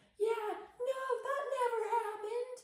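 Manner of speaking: put-on drunken yelling, very high and loud. Retelling a drunk guy yelling at the movie, retelling a drunk man's yelling. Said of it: "and yelling at the movie".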